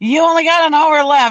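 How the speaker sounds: urgent, high-pitched, loud shout.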